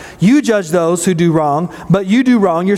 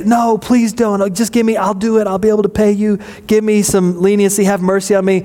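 acted mock-begging, pleading voice; 2 semitones higher than usual. Paraphrasing a parable, the speaker voices the servant pleading with the king; acting out begging. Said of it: "he begs".

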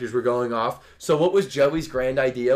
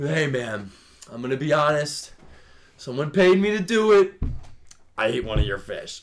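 put-on drunken speech; 2 semitones higher than usual. Retelling a drunk friend's confession at a party: imitating a drunk friend. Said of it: "when someone's really drunk".

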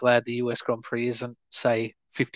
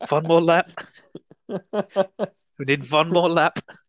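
urgent, high-pitched, put-on German accent; 5 semitones higher, 4 dB louder than usual. Voicing someone calling for one more lap, German accent. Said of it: "you've got the wrong German accent".

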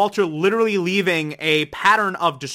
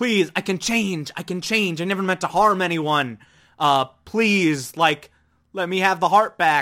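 put-on pleading character voice. Recapping a show's ending, acting out Walter begging.

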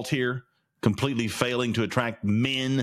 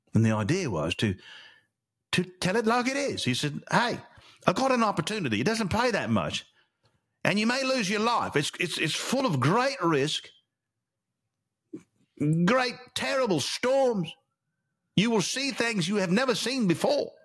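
fake British accent, storytelling style; 9 semitones higher than usual. Storyteller narrating a tale while practicing a put-on British accent. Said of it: "I gotta work on my British".

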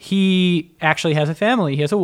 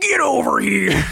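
put-on angry Chicago man, high and rough; 7 semitones higher than usual. Describing a fighting-game character's voice line, in a mock-angry Chicago-guy voice. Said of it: "Like an angry guy from Chicago".

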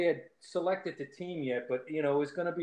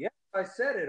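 plain

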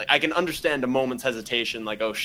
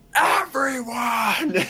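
put-on scream at full volume, pitched higher; 13 semitones higher than usual. Retelling a movie scene where Gary Oldman screams: imitating Gary Oldman screaming. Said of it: "And screams at the top of his lungs".

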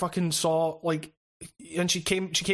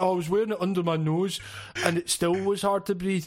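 scornful, derisive put-on grumbling voice. Mocking people who complain about masks: imitating people complaining. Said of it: "you can't fucking have that complaint".

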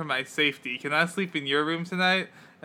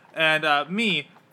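ordinary talk, nothing marked

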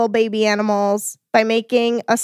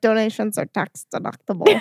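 put-on thick Scottish accent. Hosts joke about the man who says donations are tax deductible; [name]'s thick Scottish accent. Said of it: "In like a very thick Scottish accent".

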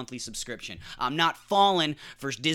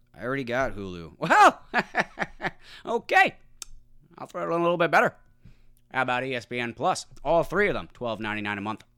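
put-on auctioneer voice; 2 semitones lower than usual. Retelling a streaming bundle sales pitch, voicing Walt like an auctioneer. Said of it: "It sounded more like an auctioneer".

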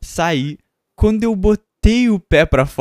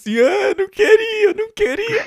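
put-on crying, higher pitch. Retelling how he came back after the cow incident, imitating Lucas crying. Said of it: "ele voltou chorando assim".

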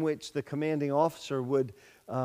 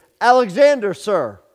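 very loud, high-pitched, soldierly shout; 6 semitones higher, 14 dB louder than usual. Retelling a soldier answering a general who demanded his name, very loud voice. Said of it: "in a very loud voice".

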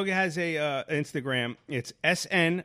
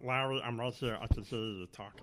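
put-on dog voice, lower and quieter; 6 semitones lower, 11 dB quieter than usual. Answering as the dog when asked if he listens: voicing the dog Snoop. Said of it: "Why does he sound like Paula Poundstone?".

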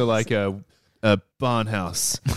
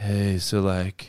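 mimicked creepy sleazy voice, lower pitch; 4 semitones lower than usual. Imitating how a man in a pilot talked: stereotypical hit-on creep voice. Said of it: "he had the stereotypical hit on creep voice".

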